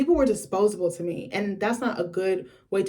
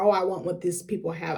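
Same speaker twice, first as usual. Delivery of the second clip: usual speaking voice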